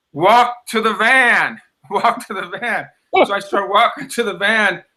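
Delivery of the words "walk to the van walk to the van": high-pitched drawn-out yelling. Retelling how the staff called out directions: imitating staff yelling. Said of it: "I hear her staff yelling".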